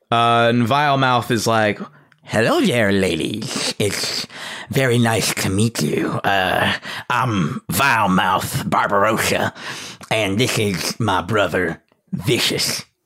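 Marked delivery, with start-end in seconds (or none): 2.2-12.8 put-on voice through teeth, much lower. Voicing Vilemouth as he greets a lady and introduces his brother. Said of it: "it is audibly difficult for him to speak with all the teeth".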